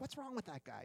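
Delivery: high, incredulous exclaiming, like a sports radio caller.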